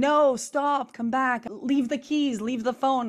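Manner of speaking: high, loud, top-of-lungs scream. Retelling chasing a thief down the street, re-enacting screaming at the top of lungs. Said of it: "I'm screaming".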